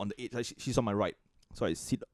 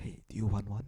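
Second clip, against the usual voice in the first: imitated whispering voice. Retelling how someone leaned close at the movie: imitating a whisper. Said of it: "kinda whispered in my ear".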